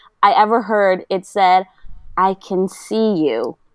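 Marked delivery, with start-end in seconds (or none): 2.2-3.5 eerie, unsettling, slow drawn-out creepy voice. Retelling what someone scratching at the window said: imitating a creepy voice.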